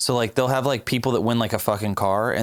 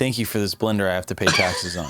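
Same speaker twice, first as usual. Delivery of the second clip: ordinary delivery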